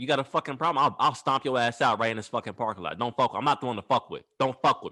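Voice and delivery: hard, aggressive, threatening, menacing delivery. Retelling how a friend went in on a man in a parking lot: imitating someone angrily threatening. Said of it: "my homeboy went in on his ass".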